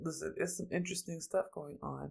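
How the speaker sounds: hushed voice. Speaker on China, Russia and the balloons, lowering voice to stay safer: quiet. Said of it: "I'm saying this quietly".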